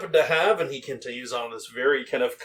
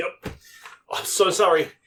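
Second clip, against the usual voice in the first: high, slow, fumbling, comically clumsy and flustered; 5 semitones higher than usual. Voicing a clumsy shopkeeper stumbling down the stairs: flustered apologetic character voice. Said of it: "looks almost comically inefficient".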